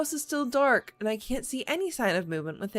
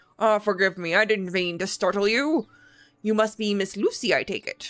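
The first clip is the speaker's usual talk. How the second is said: put-on kindly, gentle, grandfatherly old man voice; 4 dB louder than usual. A narrator voices an older man greeting a visitor on the manor steps, gentle grandfatherly old man voice. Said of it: "I gotta get my old man voice out".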